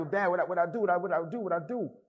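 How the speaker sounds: high, tearful, sobbing pleading cry, repeated. Retelling pleading with Dad while being beaten: retelling own crying plea. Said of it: "And I'm crying like".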